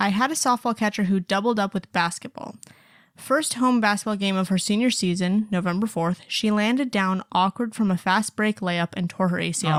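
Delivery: ordinary talk, nothing marked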